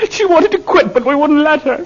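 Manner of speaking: very high, wailing, bawling sob. In a drama, confessing about Mama's death as another snaps at them: bawling. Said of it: "Stop your bawling. You sound like a 2-year-old".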